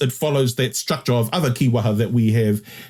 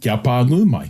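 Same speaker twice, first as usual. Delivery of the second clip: ordinary delivery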